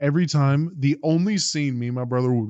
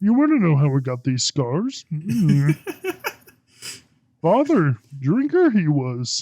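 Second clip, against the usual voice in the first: little ancient wise alien creature voice; 4 semitones higher, 3 dB louder than usual. Riffing on lines from movies with a friend, speak in a Yoda voice.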